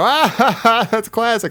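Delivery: mock little kid laugh, high, drawn-out, amused. Retelling laughing along with everyone at four years old: imitating own childhood laugh. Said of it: "everybody in the house is laughing".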